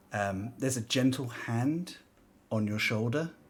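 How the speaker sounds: usual speaking voice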